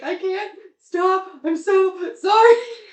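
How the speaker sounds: acted sobbing wail, very high, very loud, drawn-out. Retelling how a younger sister reacted at a birth: imitating someone sobbing. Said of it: "sobbing, and she's like".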